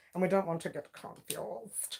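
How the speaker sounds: attempted upper-crust posh accent. Reading out names and joking about mix-ups: trying to sound posh. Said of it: "I'm trying to sound all posh".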